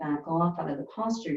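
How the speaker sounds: ordinary talk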